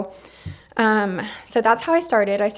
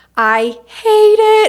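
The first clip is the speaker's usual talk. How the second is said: very loud, very high, furious scream; 12 semitones higher, 10 dB louder than usual. Retelling what the woman screamed on seeing her blow-dried hair: retelling a scream. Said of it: "she literally screams".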